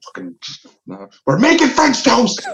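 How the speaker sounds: put-on angry outburst, high and swooping. Describing angry cooking, the speaker acts out a mock pissed-off outburst. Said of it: "You're gonna get pissed off".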